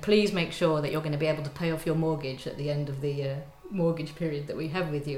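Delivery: ordinary delivery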